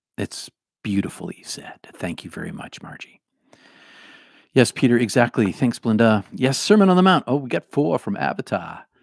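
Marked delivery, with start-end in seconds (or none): 7.3-8.8 light Boston accent coming through. Speaker acknowledging audience answers as they come in, slipping into a light Boston accent. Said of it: "A little Boston accent there for you".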